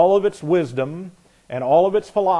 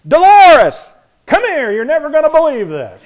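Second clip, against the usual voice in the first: very loud, shrill, booming, high-pitched holler; 11 semitones higher, 10 dB louder than usual. Retelling how his dad yelled down the street, imitating dad's booming yell. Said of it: "in my dad's booming voice, he yells".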